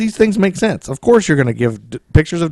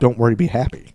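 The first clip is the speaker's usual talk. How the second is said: ordinary delivery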